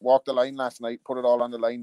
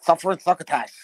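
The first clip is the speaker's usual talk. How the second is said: lisping speech with the voice pitched up; 5 semitones higher, 4 dB louder than usual. Commenting on how the mic sounds this week, in a Sylvester the Cat voice. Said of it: "A bit like Sylvester the Cat".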